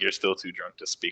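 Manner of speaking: muttered under his breath. Voicing a character who remarks on a drunk companion: muttered under his breath. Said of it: "under his breath".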